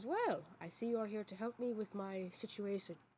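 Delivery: put-on, sly, shrewd, sleazy nobleman voice. Narrating a scene to listeners, voicing a nobleman character who looks up at them. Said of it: "he kind of looks up at you with like a raised eyebrow and he goes".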